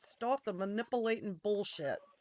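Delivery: reproachful voice. Repeating another speaker's complaint straight back at him: imitating Lauren. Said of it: "Just an hour of me repeating him".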